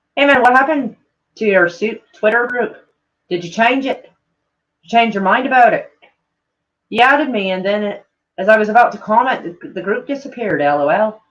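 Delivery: tentative attempt at a Scottish accent. Reading a viewer's message aloud in an attempted Scottish accent. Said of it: "I'm supposed to read his shit in, in, uh, Scottish".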